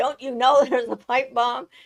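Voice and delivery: put-on high, sudden, startled, urgent yell. Retelling yelling at a pirate ship after its cannon fired: imitating own past yell. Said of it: "And I yelled at them".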